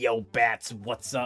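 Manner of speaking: attempted villain voice that comes out raspy and smoker-like. Speaker greets Bats in a failed Joker voice that sounds smoker-like. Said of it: "It's a Smoker voice".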